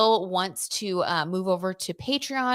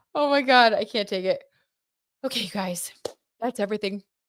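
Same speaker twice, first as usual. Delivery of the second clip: speaking while fighting back a yawn. Wrapping up for viewers before going to bed, fighting back a yawn. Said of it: "I'm fighting back the yawn".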